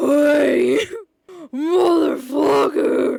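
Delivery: very loud, booming slow-motion slowed-down voice. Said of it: "I can't take it seriously when this voice sounds like that slowed down".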